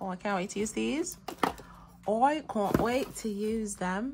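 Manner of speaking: bad, terrible put-on British accent. Speaker admiring new items before trying them, terrible British accent. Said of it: "What a terrible British accent that was just now".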